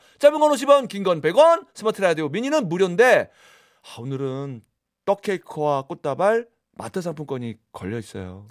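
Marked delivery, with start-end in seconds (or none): 4.0-8.5 soft, sorrowful, mournful, sad reading. A radio host reading out today's prizes, as a sad reading. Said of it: "그냥 슬프게 좀 읽어봤어 나도".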